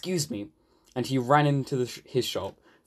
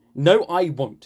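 crossly snapped-back, raised voice; 4 semitones higher, 6 dB louder than usual. The barber answers the engine that crashed through his door; cross. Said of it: "said the barber crossly".

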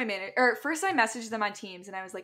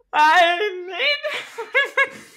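play-acted, very high, very loud, tearful choked-up cry; 10 semitones higher, 8 dB louder than usual. Retelling a phone call to give two weeks' notice: imitating choking up. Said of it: "I started choking up and I was like".

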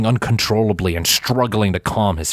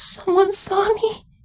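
horrified whisper, pitched very high. He swallows down the lump in his throat, then gives a horrified whisper. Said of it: "he whispered in horror".

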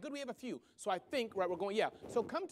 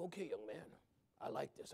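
gravelly put-on male voice, lower, quieter; 8 semitones lower, 10 dB quieter than usual. Speaker quoting a man who had been pushing him, imitating a gravelly man. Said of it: "he was still gravelly".

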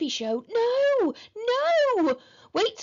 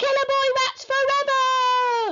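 high, drawn-out shriek, "forever" stretched long; 8 semitones higher, 4 dB louder than usual. A boy being dragged off stage by security guards, shrieked. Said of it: "Shrieked Henry as he was dragged off".

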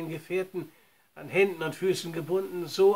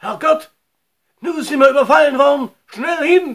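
high, very loud, urgent, alarmed shout; 7 semitones higher, 13 dB louder than usual. Frank, after Old Shatterhand's shout ends in a gurgle, calling out. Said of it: "rief Frank".

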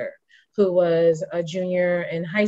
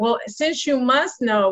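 mock, snippy, pitched-up attitude; 6 semitones higher than usual. Retelling a reply to a school office worker who kept asking: imitating own past attitude. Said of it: "with an attitude".

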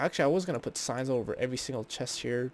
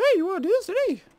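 very high, loud, shrill, booming cartoon squeak; 9 dB louder than usual. Repeating your own question to viewers and wondering why it sounded that way, Mickey Mouse voice. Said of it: "Freaking Mickey Mouse up in here".

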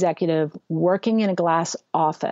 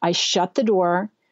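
ordinary talk

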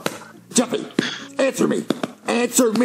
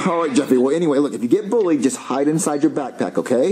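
ordinary delivery

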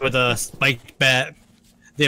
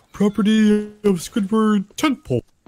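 raised pitch, cartoon-style voice; 7 semitones higher than usual. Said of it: "a spot-on Patrick if I said the line".

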